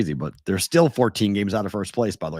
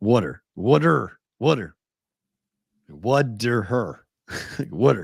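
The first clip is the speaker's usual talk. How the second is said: "water" pronounced the Philadelphia way. Demonstrating how Philly says the word water, in a Philly accent. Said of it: "the way that Philly says it".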